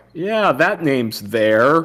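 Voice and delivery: wary, doubtful tone. Speaker retells how the person at reservations confirms the name, imitating a suspicious reply. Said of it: "They say it like suspiciously".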